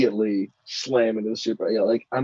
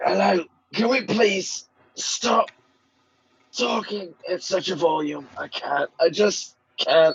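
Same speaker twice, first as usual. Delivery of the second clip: pitched-up, pained, groaning whine; 7 semitones higher than usual. Voicing a character begging others to stop talking so loudly: hungover, pained complaining. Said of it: "a very hungover Aramiel".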